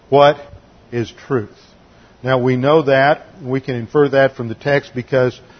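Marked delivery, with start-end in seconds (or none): 0.1-1.5 acted sarcastic tone. Retelling a scene from the text, acting out a sarcastic tone. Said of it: "in a very sarcastic tone".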